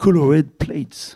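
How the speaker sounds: spoken with an English accent. A French speaker quoting Rimbaud's English title, in an English accent. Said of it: "pardonnerez l'accent anglais".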